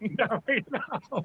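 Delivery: put-on, very high, yelled out. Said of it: "And I yelled out".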